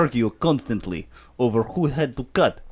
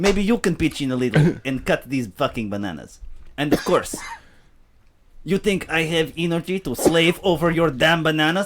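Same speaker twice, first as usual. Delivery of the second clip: put-on Mexican accent, higher pitch; 3 semitones higher than usual. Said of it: "And then you went Mexican".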